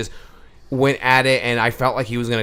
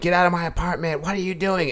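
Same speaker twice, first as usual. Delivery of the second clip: put-on high-pitched shrieking woman voice, screaming; 7 semitones higher than usual. Retelling an overheard fight between neighbors, imitating a screaming woman. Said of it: "this woman's screaming".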